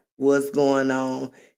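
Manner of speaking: plain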